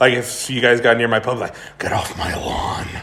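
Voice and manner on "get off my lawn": breathy, half-whispered voice. Imagining a character who tells people near his pub: Clint Eastwood voice. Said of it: "make him sound like Seth Rogen or if I wanna make him sound like Clint".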